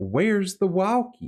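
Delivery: put-on very high voice with heavy Southern accent. Imitating a voice heard on a recording, imitating a southern accent. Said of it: "very, very Southern".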